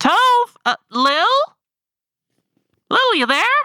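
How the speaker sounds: very high, loud hollering, calling out. A character calls toward an open window with no sounds, calling out loudly. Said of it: "hands around her mouth".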